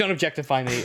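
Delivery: ordinary delivery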